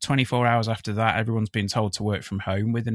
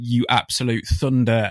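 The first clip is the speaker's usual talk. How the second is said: plain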